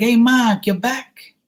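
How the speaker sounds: put-on Boston accent, very high and drawn-out. Describing how boston locals greet him on his return, imitating a boston accent. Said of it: "that's how they talk when I go there".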